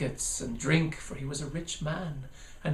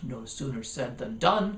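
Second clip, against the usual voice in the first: plain reading voice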